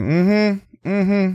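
high, bored, dismissive mm-hmm. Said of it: "I'm like".

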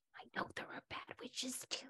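unvoiced whisper, under the breath.

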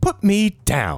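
lifted, high-pitched voice. Voicing a rapier that speaks in a player's head: talking rapier voice. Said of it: "you hear a voice in your head say".

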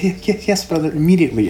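stammering, a little high. Voicing a character answering her brother's order: stuttering a little. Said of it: "she's stuttering a little bit".

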